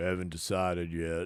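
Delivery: put-on very deep, hushed old-cowboy voice. Quoting a movie line while watching it: Sam Elliott impression. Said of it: "No, it's Sam Elliott".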